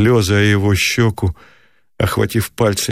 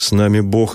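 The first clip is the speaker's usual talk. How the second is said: ordinary delivery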